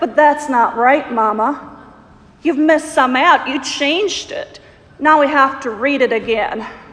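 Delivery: put-on outraged, childlike indignation. Mother retelling her daughter's protest during a story reading, retelling an outraged protest. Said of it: "with an outraged voice".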